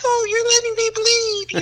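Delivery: put-on very high, whiny, babyish pleading tone. Retelling a scene where a stabbed man begs the woman, mimicking whiny baby-like begging. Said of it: "he's like a little baby begging".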